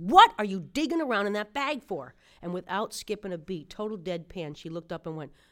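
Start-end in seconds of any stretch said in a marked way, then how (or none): 0.0-2.1 acted-out fed-up, very loud, exasperated blurt. Comic retelling what they finally said to a woman, retelling exasperated question. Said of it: "I just couldn't take it anymore".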